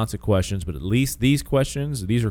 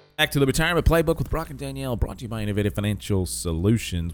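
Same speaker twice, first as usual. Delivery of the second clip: rapid-fire, rattled-off auctioneer-style patter; 2 semitones higher than usual. Host reads the show's return intro, in a fast auctioneer voice. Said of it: "I was like auctioneer voice here".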